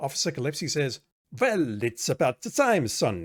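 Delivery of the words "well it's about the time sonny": put-on thick, laid-on, heavy Italian accent. Officer Gillespie speaks to Sonny, in his heavy Italian accent. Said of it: "In his heavy Italian accent".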